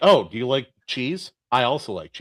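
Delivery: put-on breezy, offhand casual tone. Describing a chilling guy on a show, imitating his casual tone. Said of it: "it just was said so casually".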